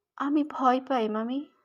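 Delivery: barely above a whisper. Priyanka answers her aunt's insistent questions, almost whispering. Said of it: "প্রায় ফিসফিস করে বলল".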